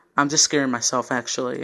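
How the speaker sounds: plain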